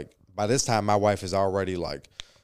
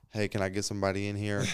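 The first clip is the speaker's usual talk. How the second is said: put-on casual tone; 4 dB quieter than usual. Retelling how he called for help: imitating a casual tone. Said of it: "all casually and shit".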